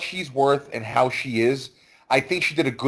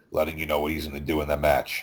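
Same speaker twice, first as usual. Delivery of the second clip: very low, flat monotone drone; 10 semitones lower, 6 dB quieter than usual. Imitating his promos before a match, Harley Race monotone. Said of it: "He would talk in a monotone voice. He would talk like this".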